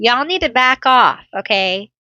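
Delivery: sudden, abrupt yell. Yelling at gnats attacking mid-reading: yelling at gnats. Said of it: "I'm yelling at the gnats".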